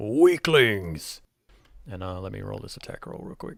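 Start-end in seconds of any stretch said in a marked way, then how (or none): 0.0-1.2 huge, very loud, booming, thundering yelled taunting tone. Voicing an unseen enemy attacking the party: booming voice yelling. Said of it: "this booming voice that just yells".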